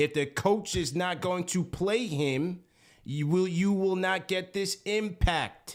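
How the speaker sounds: slow, emphatic.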